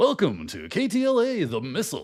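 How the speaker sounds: swooping radio DJ announcer delivery. Reading out comments to listeners, deliver this one in [name]'s radio voice. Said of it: "in his radio voice".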